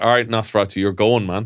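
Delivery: put-on, stern, fatherly dad voice. Retelling ordering a costumed vampire out of the lift: retelling own stern dad voice. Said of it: "naught to dad".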